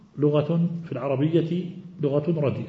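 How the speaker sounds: ordinary delivery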